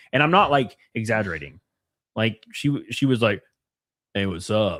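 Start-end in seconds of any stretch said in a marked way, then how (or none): 4.1-4.8 unexpectedly very deep, low-pitched voice. Retelling meeting a girl from Tinder: imitating a girl's very deep voice. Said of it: "her voice was l-, unironically deeper than mine".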